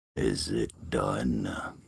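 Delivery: very low, rough, bestial devilish growl. Game master voicing a voice inside a chained character's head: devilish, bestial voice. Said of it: "a devilish, bestial voice in your head".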